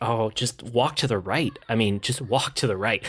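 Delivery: ordinary talk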